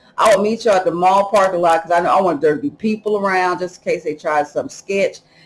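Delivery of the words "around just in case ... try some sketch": normal talking voice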